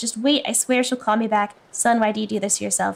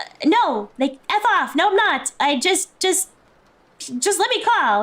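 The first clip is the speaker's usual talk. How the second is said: put-on irritated, getting angry, pitched up and slow; 6 semitones higher than usual. Retelling the character answering police: imitating an angry retort. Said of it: "And that makes him mad".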